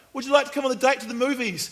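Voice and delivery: very high-pitched, loud called-out yell. Retelling a question called out to a politician: imitating someone yelling. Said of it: "kind of yelled at him".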